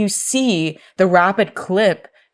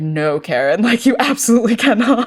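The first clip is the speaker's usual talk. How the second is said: acted contemptuous, dismissive, scornful delivery; 4 semitones higher than usual. Retelling a request to go upstairs being turned down: imitating Jack's scornful refusal. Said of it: "deep side eye of, like".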